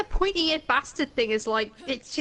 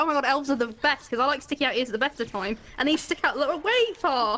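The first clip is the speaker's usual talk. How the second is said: normal talking voice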